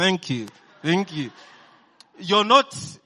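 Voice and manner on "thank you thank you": forced speech through clenched teeth. Speaker showing the audience how some of them say thanks, through clenched teeth. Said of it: "saying thank you with clenched teeth".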